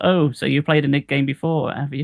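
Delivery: normal talking voice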